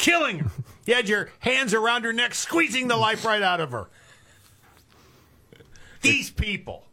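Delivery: loud shouting. Ranting to the other speakers, infuriated: yelling. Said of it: "Why are you yelling?".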